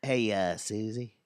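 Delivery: low, creepy voice. Imagining a stranger telling a driver her high beams are on, Matthew McConaughey impression. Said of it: "Mine's kind of like some creepy".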